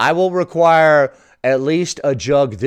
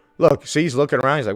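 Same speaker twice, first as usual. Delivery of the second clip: plain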